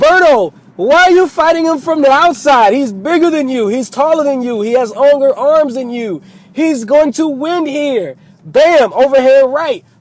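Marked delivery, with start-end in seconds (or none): 0.0-8.2 yelling in a high voice. Retelling watching a fight on screen: imitating yelling at the screen. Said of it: "I'm yelling at the screen".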